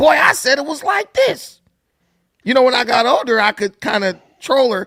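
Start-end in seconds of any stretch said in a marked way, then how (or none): 0.0-1.6 high, insistent, stern voice. Retelling how his mom answered when he corrected her as a kid: imitating his mom. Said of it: "like my mom, she'll say that".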